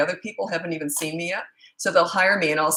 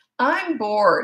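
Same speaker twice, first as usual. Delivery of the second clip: bratty, snotty, whiny voice; 4 semitones higher than usual. Retelling what their older son first said, imitating a snotty whine. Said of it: "in that snotty, whiny tone".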